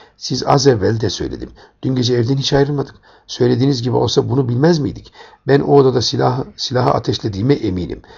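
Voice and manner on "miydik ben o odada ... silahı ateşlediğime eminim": plain reading voice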